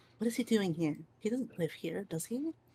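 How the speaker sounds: very hushed, very quiet mumble under the breath. Voicing a character who mutters about a newcomer: mumbling under her breath. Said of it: "under her breath mumble".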